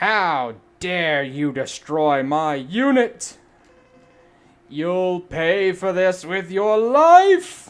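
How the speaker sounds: very loud commanding shout. Player voicing a boss mid-fight, Storm Owl commander voice. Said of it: "Let me give him a good commandery voice".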